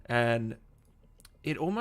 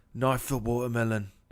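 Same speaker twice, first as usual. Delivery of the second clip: British accent in a put-on voice. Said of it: "That's the key to getting that voice down".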